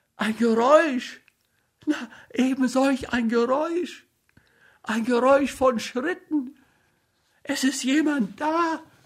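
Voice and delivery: very high, shaking, trembling stutter. A wife tells her husband about a noise in the house, trembling, stammering. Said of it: "Sie zitterte wie Espenlaub und stammelte".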